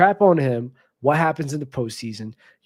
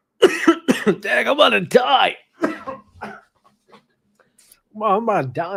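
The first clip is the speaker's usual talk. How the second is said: pitched-up, strained, choked-up voice close to tears; 8 semitones higher than usual. Praising someone for staying loyal through criticism, getting choked up. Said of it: "I'm getting choked up here".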